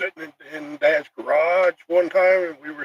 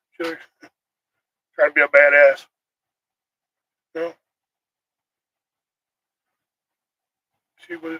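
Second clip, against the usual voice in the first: getting choked up, voice catching with emotion; 4 dB louder than usual. Describing a woman in a leather jacket and fingerless gloves, choking up. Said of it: "I'm choking up".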